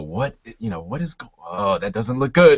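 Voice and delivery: mock worried, uneasy, halting, rising concerned tone. Voicing onlookers who react to the wound: acting out a concerned reaction. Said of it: "very concerned looks on their faces".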